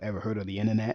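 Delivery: ordinary delivery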